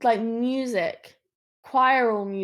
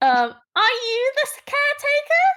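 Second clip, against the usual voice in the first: tiny, very high, loud, squeaky voice; 6 dB louder than usual. Narrator voicing the voice from a sigil-marked crate to the players, small squeaky voice. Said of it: "now I need to do a small squeaky voice".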